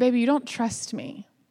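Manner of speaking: soft, gentle tone. Retelling what God said to the speaker in prayer: gentle voice quoting God. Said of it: "he real gently said".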